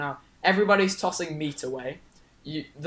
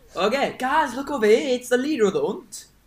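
high, bad, put-on northern English accent; 8 semitones higher than usual. Repeating a line for friends who question the accent, in [name]'s Northern English accent. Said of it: "worst Scottish accent I've ever heard".

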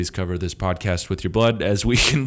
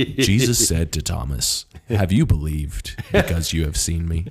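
exaggerated deep reading voice; 3 semitones lower than usual. Reading a bible verse aloud in an exaggerated deep voice. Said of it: "The deeper voice".

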